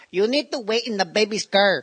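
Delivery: put-on high voice with Mexican accent. Retelling a friend's impression of the house's nanny: Mexican nanny impression. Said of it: "you did an impression of a Mexican nanny".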